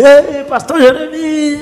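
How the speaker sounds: very high-pitched shouted call. Retelling how a woman came outside calling to the speaker: imitating someone shouting. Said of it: "gritando assim".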